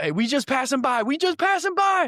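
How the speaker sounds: very high, loud, squeaky mock voice.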